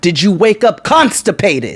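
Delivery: mock angry ranting. Retelling confronting a bus driver through the car window: retelling angrily telling someone off. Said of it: "They let him have it".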